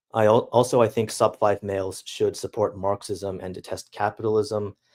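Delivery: ordinary talk, nothing marked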